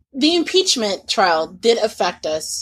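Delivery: normal talking voice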